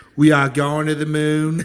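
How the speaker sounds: put-on odd Boston accent. Discussing a photo of Kennedy watching a rocket launch, Kennedy Boston accent. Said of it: "the weirdest Boston accent I've ever heard".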